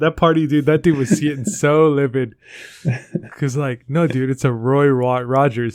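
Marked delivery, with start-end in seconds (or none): none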